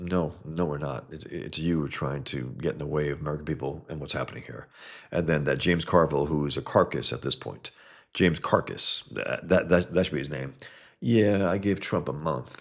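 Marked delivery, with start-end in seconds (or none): 11.0-12.6 dumb backwoods yokel talk. Mocking James Carville's prediction about Trump: ignorant hick James Carville voice. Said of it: "he sounds like some goddamn absolute ignorant hick".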